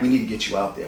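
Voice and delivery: ordinary talk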